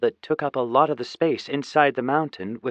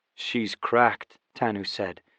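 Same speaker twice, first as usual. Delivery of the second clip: ordinary delivery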